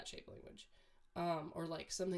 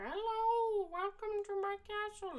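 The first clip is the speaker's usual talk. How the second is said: put-on very high, slow voice of a little old wizard. Describing scruffy older cats, acting out a little old wizard man voice. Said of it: "a little old wizard man and he's like".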